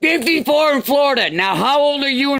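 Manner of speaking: screaming. A man answers the speaker's questions by screaming back at them: screaming. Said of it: "Stop screaming".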